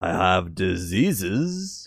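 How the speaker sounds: slow, stretched-out, drawn-out vampire voice. Quoting an actor who played Dracula, in a drawn-out, almost Dracula-like voice. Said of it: "Drawn out, almost Dracula-like".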